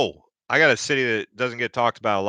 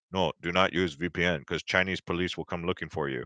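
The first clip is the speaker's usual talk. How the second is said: dead-level, very monotone, low, very quiet voice; 5 semitones lower, 9 dB quieter than usual. Quoting a visa agency worker's warning, in a very monotone voice. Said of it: "it was like a very monotone voice".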